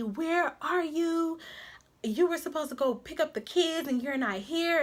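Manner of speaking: put-on high yelling. Retelling how mom yelled on the phone about the kids: imitating someone yelling. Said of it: "she's literally yelling at me".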